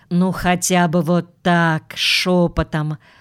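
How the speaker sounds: ordinary delivery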